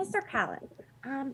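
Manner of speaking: very soft, quiet, hushed voice. A role-play character stepping over to Mister Calland, addressing him in a quiet voice. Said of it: "just in a quiet voice".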